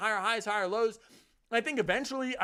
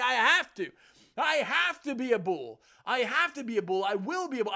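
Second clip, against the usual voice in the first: slow, preachy, preacher-style sermon cadence; 4 dB louder than usual. Declaring a bullish view on altcoins to viewers, preaching like a preacher. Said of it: "I sound like a preacher right now".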